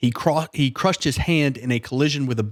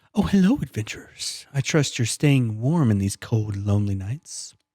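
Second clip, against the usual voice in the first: overdone, thickly creepy voice; 2 semitones lower than usual. A game master voices the shopkeeper character Justin greeting adventurers: creepy Justin voice. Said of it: "a really creepy voice".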